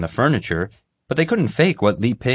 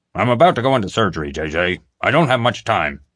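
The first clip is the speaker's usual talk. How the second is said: annoyed, irritated tone. Doc comes on the phone to JJ before surgery, sounding annoyed. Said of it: "sounding annoyed".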